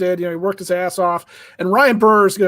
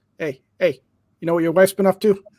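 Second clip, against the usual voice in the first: put-on Brooklyn accent, put on. Watching a pitcher on the mound, a speaker imagines his words in Coop's thick Brooklyn accent. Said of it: "he's got that thick Brooklyn accent".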